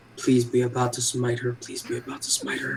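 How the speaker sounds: hushed whisper under the breath, to oneself. Voicing a character praying the cup will smite her: whispering to himself. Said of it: "I whisper to myself under my be-, breath".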